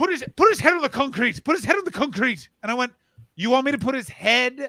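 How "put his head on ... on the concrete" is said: put-on pitched-up matronly Irish lady accent. Retelling a woman's instructions about a man's recovery position, matronly Irish lady voice. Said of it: "matronly, swamp donkey Irish lady".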